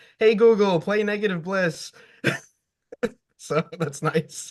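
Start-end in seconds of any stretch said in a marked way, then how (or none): 0.2-1.9 high, mild mock shouting. Retelling the speaker's son shouting at the smart speaker; mock shouting. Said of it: "I'll hear him just shouting like".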